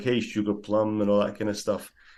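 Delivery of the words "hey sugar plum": put-on American accent, slower. Retelling a story of an escapee who believes he's Humphrey Bogart, kind of American accent. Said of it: "he narrates it over in a kind of American accent".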